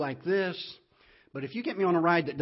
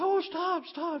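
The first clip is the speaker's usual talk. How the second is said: put-on nervous woman voice, much higher pitch. Telling a story about a young couple, acting out the woman: mock-nervous woman. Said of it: "she's all nervous".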